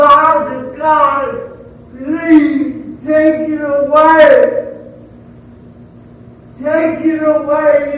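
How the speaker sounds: re-enacted crying out. The speaker acts out Paul crying out to God, retelling a cry. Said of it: "he cried out".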